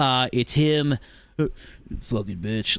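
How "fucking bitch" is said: very low, under-the-breath muttered aside. Retelling a movie character's words about his wife: imitating a muttered insult. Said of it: "under his breath".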